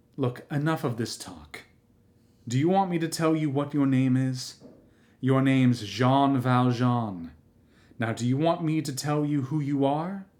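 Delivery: hushed, low voice. Narrator reads the host's words to his guest, in a low voice. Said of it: "still in a low voice".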